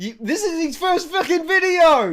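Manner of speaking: loud screaming. Reacting to a video with another speaker, loud screaming. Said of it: "Sorry to be so loud and screaming".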